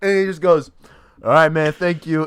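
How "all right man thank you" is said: put-on drunk voice, higher and louder. Retelling a phone call from a caller: imitating a drunk caller. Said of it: "so drunk".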